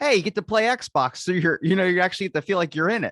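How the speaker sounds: mock hyped sales-pitch voice, high, loud, fast.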